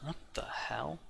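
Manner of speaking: muttered under breath. A game master voices a man inside reacting to a knock, muttered under breath. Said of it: "sort of under under his breath".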